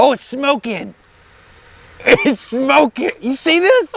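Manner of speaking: thrilled, baffled tone at very high pitch. Watching a mixture start smoking during an experiment, excited and perplexed. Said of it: "(Clearly excited and perplexed)".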